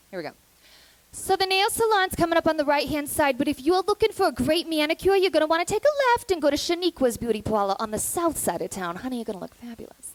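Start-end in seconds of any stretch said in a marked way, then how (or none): 1.1-9.9 put-on Brooklyn accent, full tilt, loud and high. Speaker demos a series of accents for an audience, this one a brooklyn accent.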